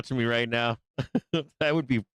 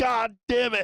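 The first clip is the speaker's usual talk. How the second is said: put-on high, furious, fed-up bear voice cursing; 8 semitones higher than usual. Imagining being a market bear watching the price: pretend angry market bear. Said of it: "I'd be fucking pissed".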